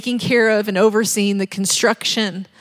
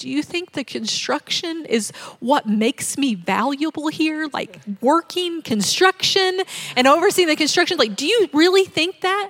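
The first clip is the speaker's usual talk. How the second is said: sweet, tearful, higher pitch, on the edge of tears; 6 semitones higher than usual. Retelling asking a question very sweetly: imitating own past sweet, teary tone. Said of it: "I said it very sweetly and I started crying a little".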